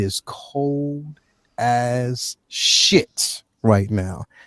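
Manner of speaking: very slow, drawn-out, stretched-long delivery. Addressing viewers in the northeast and overseas; very slow. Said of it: "I say that really, really slow".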